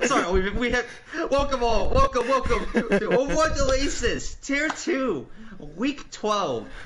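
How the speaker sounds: talking through laughter. Stream caster welcoming viewers after a live mishap, laughing while talking. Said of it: "I'm laughing because we're sorry".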